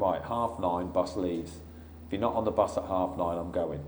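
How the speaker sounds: usual speaking voice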